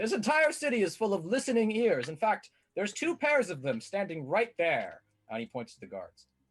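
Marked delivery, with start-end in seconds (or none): 0.0-5.0 very loud, very high, shrill, carrying voice. Game master voicing a character answering a player who holds a gun on him, very loudly. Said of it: "he just says that very loudly".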